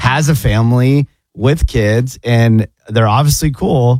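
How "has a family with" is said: plain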